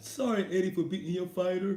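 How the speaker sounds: play-acted insincere tone, heavy dripping sarcasm. Retelling a fighter's taunt at a promoter: imitating a sarcastic apology. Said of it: "That's him being sarcastic as shit".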